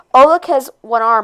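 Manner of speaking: ordinary delivery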